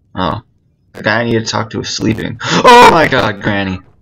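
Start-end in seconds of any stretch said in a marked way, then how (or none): 2.4-3.7 sudden, loud, drawn-out burst. While playing a game, calling out in a sudden loud outburst. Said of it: "I got really loud, I'm sorry".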